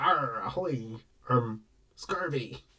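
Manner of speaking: very slow, drawn-out, hushed pirate voice. At a mini golf course, asked to talk like a pirate, in a pirate voice. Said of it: "Want you to talk like a pirate with me?".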